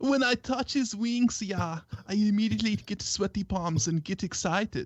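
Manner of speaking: heavy, broken, villain-style German accent. Reading Michelle's quoted words aloud from a text, in a German accent. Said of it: "you've got that accent absolutely mastered".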